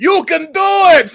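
put-on shouting fan voice. Doing the cheering fan character from Waterboy: Rob Schneider Waterboy voice. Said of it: "a weird-ass Rob Schneider from Waterboy".

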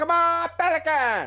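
put-on mixed Welsh, Latin American accent.

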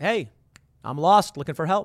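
ordinary talk

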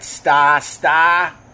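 put-on Boston accent, Boston-style pronunciation. Guessing how they say it in Boston: Boston accent. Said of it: "That's how they say it in Boston".

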